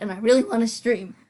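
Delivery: voice breaking mid-word. Talking to their stream audience when the voice suddenly cracks. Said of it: "why did my voice just crack like that?".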